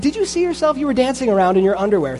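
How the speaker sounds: put-on scolding voice. Speaker retells a woman chewing out the king of Israel, retelling a scolding. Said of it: "she's chewing him out".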